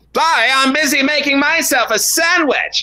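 put-on, silly cartoon voice. Answering a question as Fifties Bear: sounds like Terrance and Phillip. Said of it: "Does he just sound like the people from Terrence and Phillip?".

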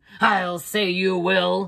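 slow, snorting tone. Narrated scene: a man answers a woman's offer to clean his shoes, snorting. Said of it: "he snorted".

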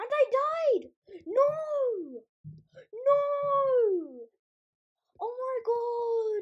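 very high, very loud, slow, drawn-out frustrated cry. Playing a game, the speaker dies right after grabbing a lucky block; annoyed outburst. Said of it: "I'm so annoyed right now".

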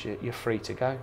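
plain

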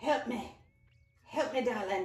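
unconvincing attempt at an Irish accent. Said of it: "Did that sound Irish at all?".

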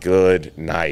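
usual speaking voice

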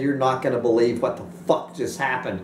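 ordinary talk, nothing marked

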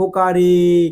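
long, slow, loud call with the vowel stretched.

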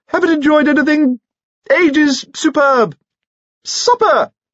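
very high, squeaky voice. Lord Robert talks to Lady Carrados over a loud band; high squeak. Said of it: "he squeaked".

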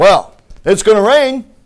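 very loud, high, sure-of-himself, confident tone. Retelling a son's weather claim: imitating a son speaking confidently. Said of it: "And he says it like he knows".

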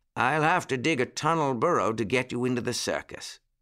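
plain reading voice

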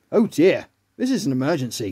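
ordinary talk

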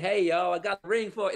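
Southern American accent. Picturing Lord of the Rings recast Southern, doing a Southern American accent. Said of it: "Let's say you get a Southern Americanized".

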